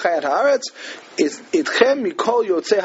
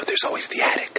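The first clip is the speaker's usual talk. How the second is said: hushed, whispered aside. Retelling a film's ending where the boy speaks to the camera: whisper to the camera. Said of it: "he whispers to the camera".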